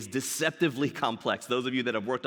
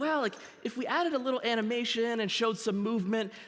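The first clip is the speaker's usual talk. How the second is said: voice climbing up high to the top; 11 semitones higher than usual. Showing how a weak argument for a button component sounds: voice going high. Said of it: "when your voice goes high like that".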